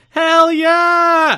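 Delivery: very high, very loud shrill crowd cheer. Recalling a lady in the crowd answering Disco, retelling a crowd member's shout. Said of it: "the one lady in the crowd shouting".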